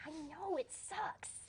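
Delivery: hushed, very soft, quiet murmur. A player in a role-play answering a character's complaint, speaking very quietly. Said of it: "I'm very quietly like".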